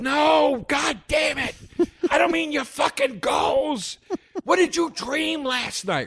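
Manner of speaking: very high, slow, drawn-out scream. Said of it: "he starts screaming at the audience".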